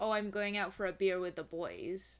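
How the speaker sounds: usual speaking voice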